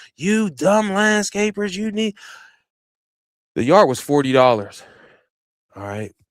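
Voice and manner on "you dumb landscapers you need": put-on angry ranting, higher pitch. Retelling how an old man cussed him out: imitating someone cussing him out. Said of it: "Smooth cussing me out".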